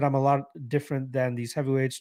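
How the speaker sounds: usual speaking voice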